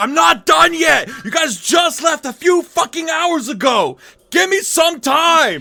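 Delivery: angry screeching, very high and very loud. Voicing a workshop owner as the party walks in: yelling at the party. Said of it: "he just yells at you".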